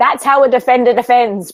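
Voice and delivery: yelling, pitched high. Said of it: "yelling at Rance".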